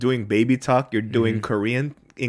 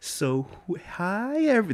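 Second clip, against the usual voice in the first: drawn-out preschool-teacher voice, very high and very slow; 9 semitones higher, 4 dB quieter than usual. Imitating how preschool teachers speak to their kids: talking slow. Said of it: "they talk slow".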